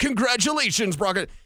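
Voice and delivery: big-voiced sports promo announcer voice. Mocking a station promo congratulating broncos country: imitating a big promo announcer voice. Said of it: "with the big voice being like".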